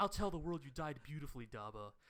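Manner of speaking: put-on grandiose, pompous, self-important fop voice. Retelling an anime scene, quoting the self-important fop: put-on voice of a self-important fop. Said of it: "you did that voice a little too well".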